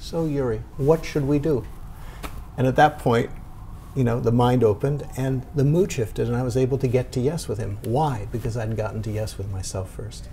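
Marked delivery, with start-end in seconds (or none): 0.0-1.6 tired, worn-out, weary, deflated tone. Retelling what a man asked him after thirty minutes, in a weary tone. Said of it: "in a kind of weary tone of voice".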